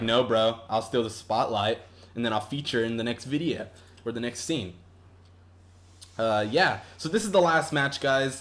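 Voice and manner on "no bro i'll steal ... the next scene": ordinary delivery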